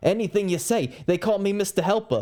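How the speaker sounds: put-on Brooklyn accent. Retelling a movie scene where the friend, facing Todd's gun, switches to a Brooklyn accent. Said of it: "says it in this like British uh not British um Brooklyn accent".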